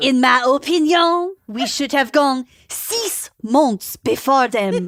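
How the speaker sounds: put-on French accent. Acting out a taped conversation as Luc Jouret: French accent. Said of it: "Now you have to do French accents".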